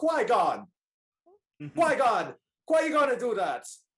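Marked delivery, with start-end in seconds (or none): 0.0-2.3 slow, drawn-out put-on Jamaican accent. Looking at the other person's screen, the speaker repeats a name; Jamaican accent. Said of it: "I literally think of a Jamaican accent".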